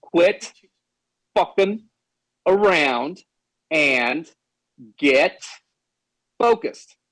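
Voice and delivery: very slow, halting, broken up word by word. Told to say it again slowly for the chat, said very slowly. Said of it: "Say it slow".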